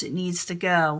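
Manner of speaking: plain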